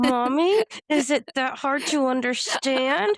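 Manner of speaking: slow words forced out through gritted, clenched teeth. Recounting a child's complaint while driving, the speaker imitates him talking through teeth. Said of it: "talking through his teeth".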